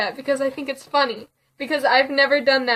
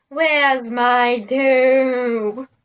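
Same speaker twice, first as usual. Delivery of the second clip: long groaning delivery, with "toe" drawn out; 4 dB louder than usual. Reading a scary story aloud, the narrator voices the approaching thing groaning. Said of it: "It groaned".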